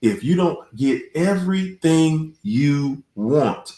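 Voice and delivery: slow, deliberate, drawn out word by word. Giving advice to an audience, the speaker says this line: said slowly. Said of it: "I said that slow for you".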